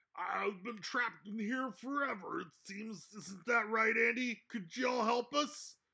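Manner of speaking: high, chattering, frog-like voice. The narrator voices a trapped being in the game, chattering in a froggy voice. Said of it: "chattering away in a froggy voice".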